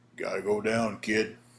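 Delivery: super deep put-on voice. Recounting a match, quoting the one holding him, in a super deep Nelson voice. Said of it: "in that super deep voice Nelson had".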